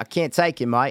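put-on Australian accent. Trying a hard accent for a laugh: put-on australian accent. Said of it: "I just got to the Brit. I was on Aussie".

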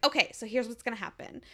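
ordinary delivery

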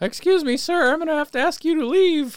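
shrill cartoon nerd voice, very high and loud. Retelling what a man said, in a Simpsons nerd voice. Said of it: "He sounded like the the nerd from The Simpsons".

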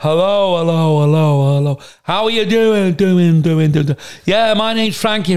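put-on echoing, reverb-like voice. Asked for an impression, showing how talking on reverb sounded, mimicking a reverb echo. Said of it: "as on reverb now on echo".

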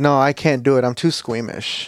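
normal talking voice

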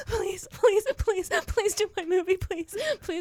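mock, very high, tearful, crying voice. Retelling begging an actor to do the movie: imitating own crying plea. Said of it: "she got tired of my crying".

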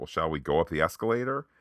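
normal talking voice

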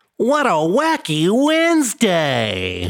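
very high, swooping cartoon villain voice. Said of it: "That's my cartoon villain voice".

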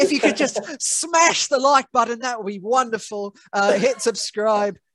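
Aussie-sounding voice. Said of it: "You went Australian there, mate".

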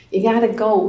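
put-on Boston accent. Retelling what she urged about coming here: Carolina's Boston accent. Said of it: "in her Boston accent".

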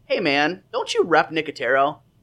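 ordinary delivery

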